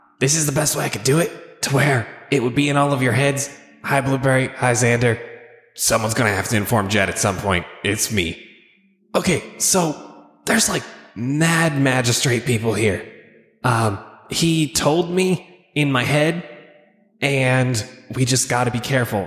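hushed, secretive stage half-whisper. Half-whispering a message into a sending stone to the group: half-whispering. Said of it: "whisper into the sending stone".

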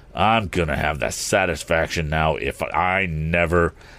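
plain reading voice

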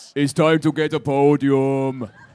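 put-on Austrian accent. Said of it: "mildly offensive sort of Austrian accent".

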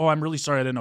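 acted, earnest, sincere, genuinely sorry tone. Retelling apologizing after being yelled at for a rule: imitating an earnest apology. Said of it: "earnestly like".

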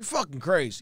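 soft, hushed, said under the breath. Retelling a bus story, doing an impression of the man she spat at. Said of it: "That was a good impression".

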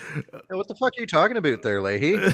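put-on Canadian accent. Retelling what T said to Leahy, imitating T's Canadian accent. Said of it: "T's Canadian accent comes out comes so out here".

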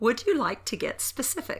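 sweet, cutesy, high, slow delivery. Recording a line for a cold open: quiet cute delivery. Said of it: "it came in really quiet".

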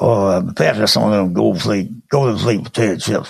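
mumbled low, words barely clear. Imitating a football coach on his TV show asking for chips: Bear Bryant voice. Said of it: "Bear would say".

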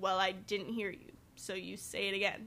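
put-on bitchy, snippy tone. Retelling what she said to a customer at her retail job: imitating her own bitchy tone. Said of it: "I probably sounded bitchy as hell".

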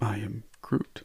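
sad, grief-stricken, mournful delivery. Saying a line as though your grandmother just died, grief-stricken. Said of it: "You're supposed to be saying it because your grandmother just died".

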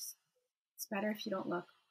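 gentle, soft, hushed half-whisper, close to the ear. Comforting a character held against the shoulder: half-whispering. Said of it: "I just kinda whisper".

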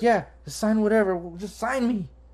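very high, squealing, gushing starstruck excitement. Recounting a fan asking him to sign something, mock-excited fan. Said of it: "She's like all excited".

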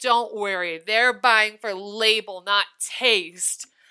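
mock old man speaking loudly. Retelling what an old man said loudly in the store: imitating an old man speaking loudly. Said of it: "we hear so loud in the store".

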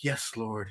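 quiet under-the-breath whisper, hushed and murmured. Retelling how a lady at the movie prayed: imitating a lady whispering. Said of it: "the whole time she was whispering".

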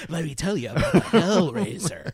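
put-on old man storyteller narrator voice. Imitating the weird narrator who grabs you off the street: imitating an old narrator. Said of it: "an old guy trying to tell you a story".

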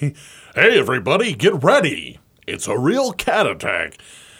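big, swooping, showy announcer voice. Talking about a favorite, imitating the announcer guy at the start. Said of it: "I just like the announcer guy at the start".

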